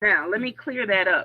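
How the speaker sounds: normal talking voice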